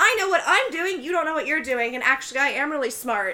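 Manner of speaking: put-on angry ranting. Retelling a movie scene where a guest goes off at a host: imitating someone going off angrily. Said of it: "the YouTuber just goes off".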